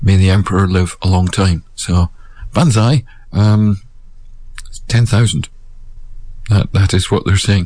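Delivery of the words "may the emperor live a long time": ordinary delivery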